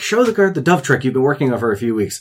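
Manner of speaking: scolding voice. Recounting a game scene where a troupe leader yells at Velvet, retelling a yell. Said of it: "she's yelling at Velvet".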